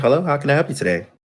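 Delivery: put-on, polite, professional customer-service phone voice. Retelling how they answer the phone at work: imitating own polite work phone voice. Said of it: "when I answer that phone, I'm like".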